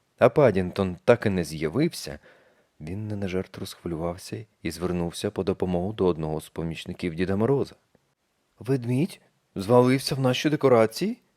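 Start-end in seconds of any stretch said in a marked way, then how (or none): 8.6-11.2 startled, surprised, astonished tone. One of Father Frost's helpers, asked for help, asks back in surprise. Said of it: "здивовано перепитав помічник".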